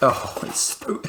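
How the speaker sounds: words breaking into laughter throughout. Unboxing a product on camera for the first time, laughing. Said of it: "I'm just laughing because it's so plasticky".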